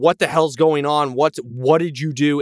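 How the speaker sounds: mock, half-hearted, mild yelling. Retelling a woman yelling at a man, retelling her yelling. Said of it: "she's like yelling at him".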